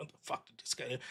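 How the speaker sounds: whispered, grumbling mutter under the breath. Describing standing alone in line when someone cuts, muttering under breath. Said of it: "I'll just mutter under my breath".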